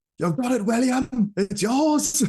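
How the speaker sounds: very high, loud sideline coach yelling. Act out a man right behind you shouting for an athlete, imitating someone yelling. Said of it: "They were just yelling".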